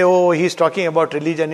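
ordinary talk

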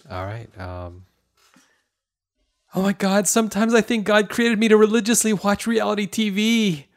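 frightened voice. Called on in a group voice game, a player delivers a line in a scared voice. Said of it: "Is that crying?".

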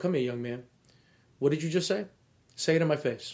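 quiet, hushed, close-up private tone. Retelling what they say to a player disputing a foul call, in a very low voice. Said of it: "And I say it in a very low voice".

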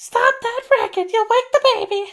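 very high, squeaky put-on voice. Telling a story about a tramp grandpappy, doing a put-on high-pitched voice. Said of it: "doing the up high voice".

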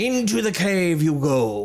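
sudden, swashbuckling put-on pirate voice. Game master narrating for players in a tabletop game, in a pirate voice. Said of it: "I suddenly became a pirate".

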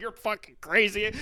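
high, furious, angry screaming. Telling how her mom reacted to a hole in the drywall, retelling mom's screaming. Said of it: "was screaming at like".

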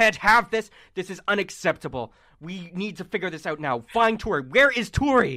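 furious, loud yelling tirade. Voicing a character yelling at someone behind a closing door: NPC yelling angrily. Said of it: "Farron is just yelling at him".

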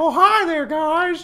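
loud, slow squeaky voice. Greeting the others in a Mickey Mouse voice. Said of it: "I sound like Mickey".

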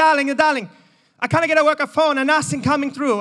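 put-on high-pitched Italian-accented grandmother voice. Retelling a phone complaint from Donna the Nonna: imitating Donna's Italian accent. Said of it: "I apologise to all the Italians".

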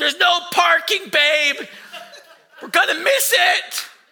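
high, loud, stressed, frantic yell.

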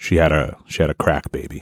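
low, soft, matter-of-fact delivery.

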